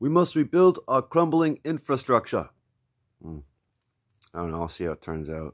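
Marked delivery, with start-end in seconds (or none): 0.0-2.5 shrill, very loud, high rally-speech shouting. Trying out impressions one after another, doing a Bernie Sanders impression. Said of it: "Try Bernie Sanders".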